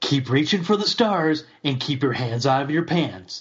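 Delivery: radio DJ style voice. Retelling a friend's joke line done as Casey Kasem: Casey Kasem impression. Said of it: "does a great Casey Kasem impersonation".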